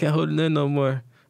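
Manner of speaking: sobbing, tear-choked, high and loud crying. Retelling a girlfriend's phone call, imitating someone crying. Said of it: "on the phone crying".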